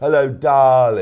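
loud, belted, showy delivery. Imitating a Strictly judge who was crying: Craig Revel Horwood impression. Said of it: "That's a good impression, actually".

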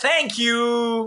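put-on high little girl voice calling out, "you" stretched. Retelling what a seven-year-old girl said in their ear, imitating a child yelling. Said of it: "She yells in my ear".

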